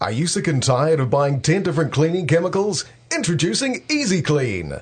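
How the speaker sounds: infomercial announcer voice. Asked by the host to do it on the show, a guest demos: infomercial voice. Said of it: "this is like my infomercial voice".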